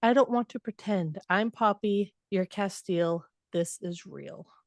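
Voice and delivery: normal talking voice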